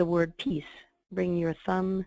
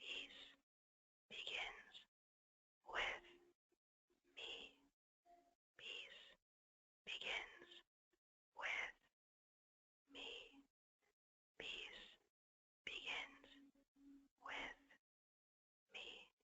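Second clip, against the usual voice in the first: slow, hushed, very soft whisper; 12 semitones higher, 25 dB quieter than usual. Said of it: "As a whisper now".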